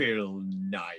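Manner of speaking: put-on, utterly venomous, poisonous, spiteful tone. Retelling a friend's answer about who got the role: retelling a venomous reply. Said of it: "in the most venomous tone of voice".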